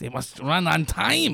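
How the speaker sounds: put-on German accent. Mocking someone eager to start on time, doing a mock German-accented Mussolini impression. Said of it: "Why do you go German for that?".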